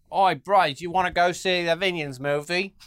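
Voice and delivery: put-on Aussie-sounding Australian accent. Acting out the group that wore suits to the cinema; put-on australian accent. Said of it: "Is that Australian?".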